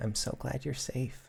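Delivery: very quiet, faint, small broken voice. A woman steadies herself on your arms and speaks in a small, broken voice. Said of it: "in a small, broken voice say".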